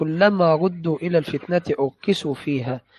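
ordinary talk

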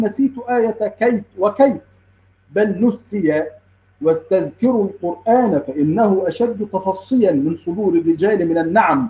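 ordinary talk, nothing marked

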